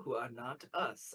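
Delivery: sharp, hushed half-whisper. Explaining to the guards, half-whispering the last part to him, sharp half-whisper. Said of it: "I whispered that last part very sharply".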